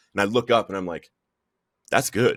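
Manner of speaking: ordinary talk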